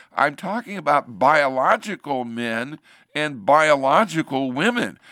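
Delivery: normal talking voice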